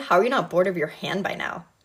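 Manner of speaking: plain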